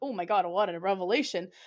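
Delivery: ordinary delivery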